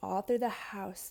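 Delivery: ordinary delivery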